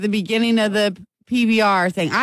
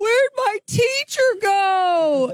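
acted very high, slow, drawn-out teary wail; 11 semitones higher than usual. Retelling the moment the priest walks out: imitating Frankie crying. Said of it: "Frankie starts crying and goes".

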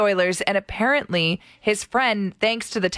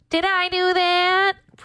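very high-pitched put-on voice; 11 semitones higher than usual. Told to go first, taking a turn at an impression, Steve Urkel impression. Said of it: "You do your impression".

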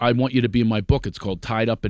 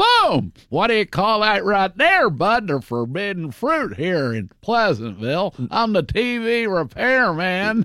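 put-on very high, slow, unhurried older-man voice; 9 semitones higher than usual. Retelling dubbing the TV repairman for the film: Don Knotts voice. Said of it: "It's actually my voice going".

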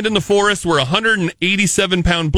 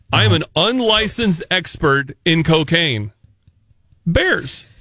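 long, awkward, deliberate pause before the word Bears; 3 semitones lower than usual. After being told off for awkward pauses, with an awkward pause before 'bears'. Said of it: "that is an intentional pause that you're putting there".

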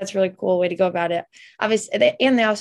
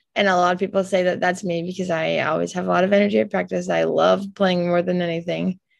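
ordinary talk, nothing marked

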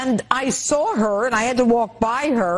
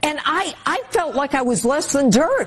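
plain

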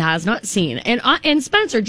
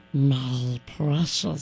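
put-on creature voice, much lower; 8 semitones lower, 7 dB quieter than usual. Asking about a Lord of the Rings character by repeating his line: Smeagol voice. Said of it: "that's just what he talks like".

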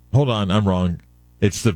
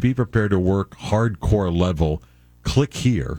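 ordinary delivery

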